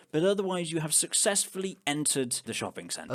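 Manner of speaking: ordinary talk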